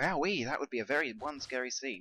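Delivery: plain reading voice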